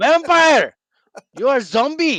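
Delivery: imitated Indian accent. Joking about being technically undead: Indian accent. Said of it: "Why did you say that in an Indian accent?".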